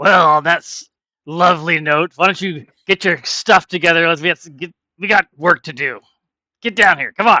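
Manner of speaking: loud, gruff captain-style bark.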